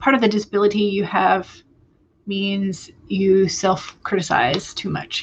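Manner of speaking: ordinary talk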